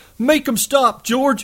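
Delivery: terrified, very high-pitched bleating voice. Lenny, attacked by Curly, covers his face and calls to George, bleating with terror. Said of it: "bleated with terror. He cried".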